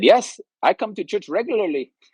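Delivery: put-on Indian accent, voice very high. Retelling what one of the guys said after church, put-on Indian accent. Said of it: "in his Indian accent said".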